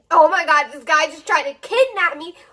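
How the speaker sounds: frantic, terrified, freaked-out panicked outburst. Retelling a call to a friend after the chase: imitating her terrified past self. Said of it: "freaking out, terrified".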